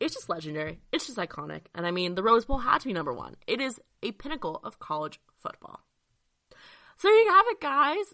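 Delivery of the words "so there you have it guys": loud voice crack, breaking very high. Wrapping up a list of top college football stadiums: little voice crack. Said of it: "that was a little voice crack".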